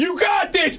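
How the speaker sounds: acted-out shrill, very high screaming yell. Recalling the person who pushed them into lifting, retelling his scream. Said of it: "he's like screaming".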